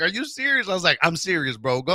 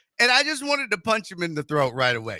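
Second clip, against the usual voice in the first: ordinary talk, nothing marked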